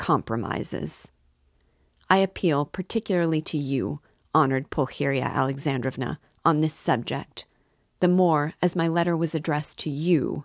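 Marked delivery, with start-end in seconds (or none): none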